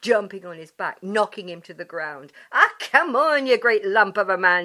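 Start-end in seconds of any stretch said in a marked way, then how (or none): 2.5-4.7 very loud, playful, teasing taunting tone. A woman taunts a man she has knocked to the ground, teasing. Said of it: "she teased".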